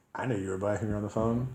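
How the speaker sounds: plain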